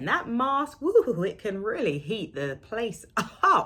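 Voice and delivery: laughing while talking. Speaker describing wearing a hot mask between clients, laughing while talking. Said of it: "I'm laughing because I'm just going".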